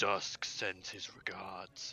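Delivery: dropped, deep, low-voiced delivery. Narrating a tabletop game scene, voice an unseen speaker: deep voice. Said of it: "you hear a deep voice go".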